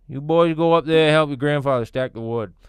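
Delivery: put-on lazy Maine accent, laid thick. Imitating what people said growing up: imitating Maine locals' lazy accent. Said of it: "That's what they would say to me".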